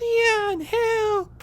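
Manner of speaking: whiny, very high, loud drawn-out cry. Comparing game companions, the speaker mimics Ashley calling for help: Ashley impression. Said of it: "I can't believe I just did that voice".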